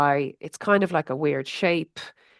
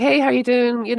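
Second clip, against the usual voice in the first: put-on cheer, higher, louder, slower; 9 semitones higher, 5 dB louder than usual. Speaker recalls ringing an older brother who answered, imitating a cheerful greeting. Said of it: "All happy, happy".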